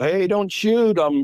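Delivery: loud, high-pitched yell. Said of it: "and I yelled out".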